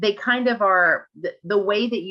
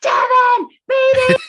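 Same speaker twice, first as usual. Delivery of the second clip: very high, very loud, shrill panicked screaming; 9 dB louder than usual. Retelling a funny scene where a character panics, retelling panicked screaming. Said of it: "He starts screaming and panic".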